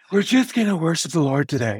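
airy, hushed, soft, breathy voice. Mimicking how pastors used to lead worship: imitating a pastor's breathy voice. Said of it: "they always did the breathy voice, like".

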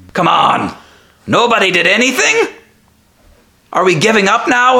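shrill, high shout. Game master voicing a character walking past the party; shouting down the hallway. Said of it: "he's shouting down the hallway".

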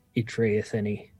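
hushed whisper. Sorindir turns, seeing a new figure join the fray, and just whispers. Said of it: "just whispers".

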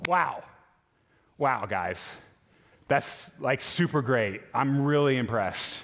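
put-on dry, unimpressed, slow sarcastic tone. Picturing God seeing the tower, imitating sarcastic praise. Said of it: "with s-, a bit of sarcasm".

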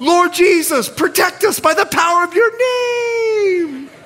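put-on very high screamed shriek, word stretched out. Retelling going over the cliff as his wife prayed, imitating Andrea screaming. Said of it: "My wife screams out loud".

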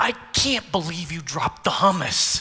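put-on irritated, snapping tone. Preacher imagining Jesus stressed out and snapping at Mary Magdalene, mock-snapping. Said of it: "snapping at Mary Magdalene".

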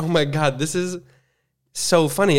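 ordinary talk, nothing marked

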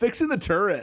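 very high, loud surfer dude voice. Imitating a rebel soldier's line from the game: imitating a surfer dude. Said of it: "he was such a surfer dude".

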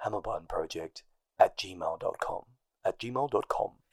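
breathy, smooth, low voice with drawn-out words. Trying the email address again, more breathy: breathy Josh voice. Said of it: "it's more breathy than that".

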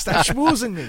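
put-on jolly old man voice.

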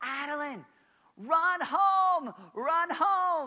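very high, very loud, slow, drawn-out top-of-lungs yell. Retelling yelling to a running child at kickball: imitating a dad screaming. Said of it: "started screaming just like a dad at the top of my voice".

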